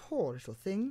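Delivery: very high, cajoling, coaxing coo. Alice speaks to an enormous puppy in a coaxing tone. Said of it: "said Alice in a coaxing tone".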